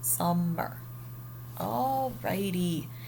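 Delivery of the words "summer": summer with sum overdone, exaggerated stress. Teaching a class to exaggerate the first syllable, exaggerated stress on sum in summer. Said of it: "We are going to ex- exaggerate that first syllable, so then we would go like that".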